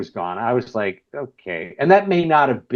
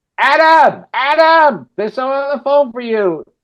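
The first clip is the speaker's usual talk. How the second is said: very high put-on Brooklyn accent, hollering; 7 dB louder than usual. Retelling a phone call, imitating the mom calling her son: brooklyn mom. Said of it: "I just pictured this, like, you know, Martin Scorsese family in, in Brooklyn, and I could hear his mom go".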